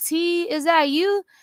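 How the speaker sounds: sweet-talking voice pitched very high. Retelling how a friend called out in the dark: imitating a friend's sweet talk. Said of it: "he got a sweet talk".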